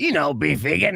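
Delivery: extra raspy, exaggerated put-on voice. Retelling a woman name-dropping at a check-in, the speaker does her extra raspy put-on voice. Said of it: "like extra raspy".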